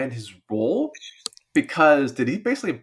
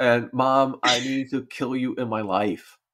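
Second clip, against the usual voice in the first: acting upset, mock-upset voice. Recounting a scene, the speaker imitates a daughter talking to her mom: upset. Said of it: "so upset at her".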